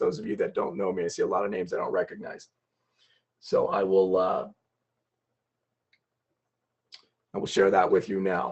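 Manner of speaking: rough, hoarse, soft-spoken speaking voice. Speaker apologizing to attendees for how he sounds, in a hoarse voice. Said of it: "I'm very hoarse in my voice".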